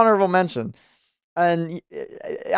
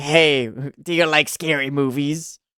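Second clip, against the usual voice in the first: put-on horror movie killer voice, lower; 5 semitones lower than usual. Imitating the iconic voice of a horror movie killer: Ghostface voice. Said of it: "He has such an iconic voice".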